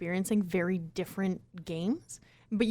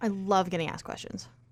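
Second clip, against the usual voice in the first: dry sarcastic tone, meaning the opposite. Reacting to being told a question is coming: sarcastic. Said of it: "That's so sarcastic".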